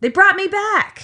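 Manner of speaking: high, loud yelling. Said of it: "that's when [name] yells".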